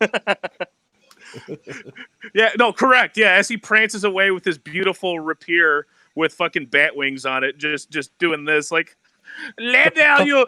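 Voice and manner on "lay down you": high, distant, sneering pretentious fake French accent. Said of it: "speaks in an awful, pretentious French accent".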